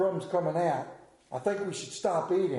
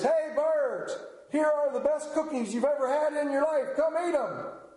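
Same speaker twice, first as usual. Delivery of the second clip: big, open-air, loud, high hollering calling shout; 9 semitones higher than usual. Narrator reading Frog calling out to the birds, shouting loudly. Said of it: "He shouted in a loud voice".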